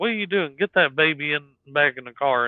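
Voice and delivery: mock urgent, startled holler. Recounting the father hollering at the mother outside the store, retelling a holler. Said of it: "he hollered at my mom".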